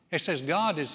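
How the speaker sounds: usual speaking voice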